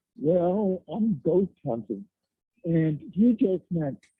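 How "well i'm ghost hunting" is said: put-on bashful, sheepish, caught-out voice. Retelling being asked what he was doing there: imitating own sheepish reply. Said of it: "in a very sheepish manner".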